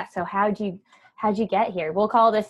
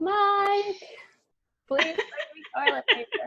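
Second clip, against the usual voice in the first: mock shrill, urgent scream pitched way up; 12 semitones higher, 4 dB quieter than usual. Re-enacting what she once called out, retelling a scream. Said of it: "Or I'm like screaming".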